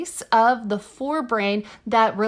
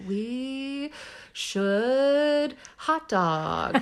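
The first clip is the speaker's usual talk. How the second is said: mock drunk slurring, quieter; 3 semitones higher, 5 dB quieter than usual. Imitating oneself drunk, trying to form a sentence: imitating drunk speech. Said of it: "like me when I'm drunk and I'm, like, trying to form a sentence".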